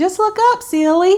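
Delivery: put-on sweet little Southern accent, shrill, high and loud. Repeating what her mother told her, imitating Gladys's sweet Southern accent. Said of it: "in her little sweet Southern accent".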